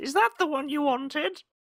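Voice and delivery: put-on very high-pitched old grandma voice. Describing a grandma handing over a christmas gift, in granny voice. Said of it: "That's an amazing granny voice".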